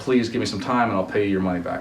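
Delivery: ordinary delivery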